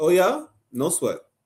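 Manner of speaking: put-on sarcastic tone. Acting out God's reply to worshippers of other gods: imitating a sarcastic retort. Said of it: "That's sarcasm right here".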